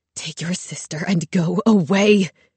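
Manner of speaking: words hissed out. An ill tentacled creature speaks to the narrator, hissing. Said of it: "Woe hissed".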